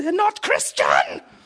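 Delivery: mock very high, shrill, piercing scream. Retelling a woman on a tv show screaming at her family: imitating someone screaming. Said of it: "And she screams".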